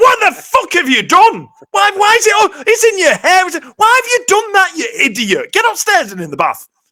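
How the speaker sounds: high, loud furious yell.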